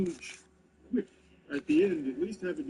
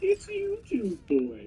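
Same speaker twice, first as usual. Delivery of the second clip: pitched-up cartoon owl character voice; 7 semitones higher than usual. Quoting an officer at the end of the reel; Tootsie Pop owl voice. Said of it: "sounding like the owl from the How Many Licks".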